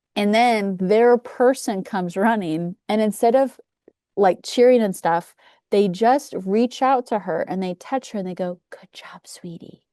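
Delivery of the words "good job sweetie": quiet mutter under breath, quieter. Retelling what a quiet family said to their runner: imitating someone muttering under their breath. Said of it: "Under their breath".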